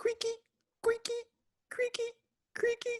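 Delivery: very high talking-staircase character voice. Voicing the creaky stairs that talk during a midnight walk: voicing talking stairs. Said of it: "My stairs have never talked before".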